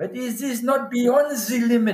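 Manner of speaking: put-on German accent. Retelling what an underwater cameraman said on a dive: German accent. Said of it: "He says to me in his German accent".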